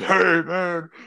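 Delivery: high, loud puppet voice. Talking about how Fred Warner sounds, imitate him in a Fred Warner Muppet-like voice. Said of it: "he kind of sounds like a Muppet".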